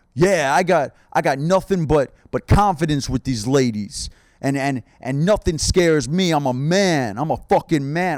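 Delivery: swaggering macho bro voice. Mocking alpha bros on podcasts bragging about confidence: imitating an alpha bro. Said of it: "alpha bros on podcasts being like".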